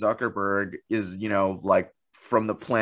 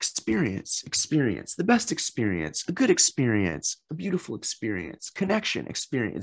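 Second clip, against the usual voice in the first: eerie, creepy, stuck-on-repeat looping delivery; 3 semitones higher than usual. Retelling a creepy video cut of repeated words: Mark Zuckerberg impression. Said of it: "He's like".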